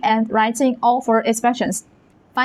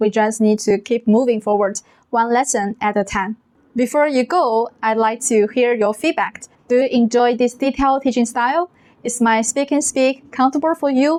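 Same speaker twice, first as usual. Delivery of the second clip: ordinary talk, nothing marked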